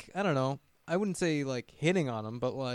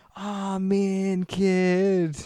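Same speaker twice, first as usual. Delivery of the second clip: put-on drunk townie voice, higher and louder; 5 semitones higher, 5 dB louder than usual. Imitating a character from the movie: imitating a drunk townie. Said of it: "talking like a town, like a drunk townie".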